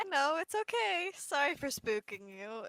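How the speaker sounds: slow, reassuring tone through giggles. Voicing a character who helps another up: giggling while reassuring. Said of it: "She just starts giggling".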